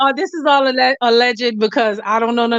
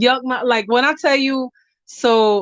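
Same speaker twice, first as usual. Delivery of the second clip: ordinary talk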